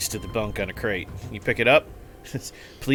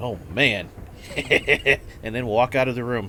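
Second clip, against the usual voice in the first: ordinary talk, nothing marked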